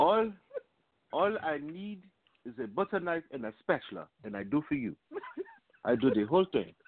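put-on Kenyan accent. Picturing how it went down, act out the doctor's offer, imitating a Kenyan doctor. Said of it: "he's a Kenyan doctor".

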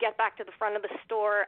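ordinary talk

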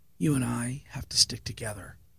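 imitated whisper. Retelling what someone leaned in and said: imitating a whisper. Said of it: "he leans in and he whispers".

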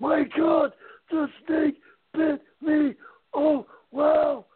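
very high, very slow, dazed, shocked gibbering. Acting out Randy for a listener, as the camera zooms in on his face, imitating Randy freaking out in shock. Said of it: "He's a freaking out".

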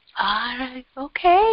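halting broken English. Retelling how a client answered after treatment: imitating broken english. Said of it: "he just English a little broken".

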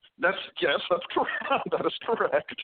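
talking through laughter. Confirming what another speaker just said, laughing while talking. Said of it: "I'm sorry for laughing".

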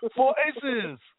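put-on Chinese accent. Hyping the network's name, saying it in a Chinese accent. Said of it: "that was a Chinese accent".

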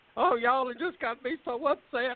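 all flustered, very high-pitched voice. Retelling how a flustered controller sounded: imitating flustered Margaret. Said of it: "she just get all flustered".

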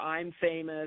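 ordinary delivery

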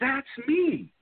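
mock startled, sudden yell, very high-pitched. Retelling a phone call where a friend shouted: retelling someone yelling. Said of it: "And she's yelling".

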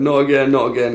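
sobbing through the words, high and tearful. Retelling falling to the floor after a shoulder popped out, retelling crying. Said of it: "I was like crying, going".

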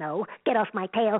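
put-on cartoon penguin voice. The speaker demonstrates how the character always talks, in Pip Penguin voice. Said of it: "He always sort of talks like this".

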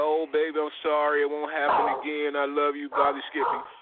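mock sweet-talking, fake contrite tone. Warning listeners about abusers, imitating an abuser's fake apology. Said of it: "He gonna come with that".

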